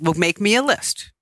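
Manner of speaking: plain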